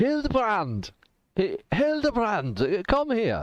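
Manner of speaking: very high, swooping, hollered call. Voicing a quartermaster calling a woman over: yelling a name. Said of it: "he just yells out".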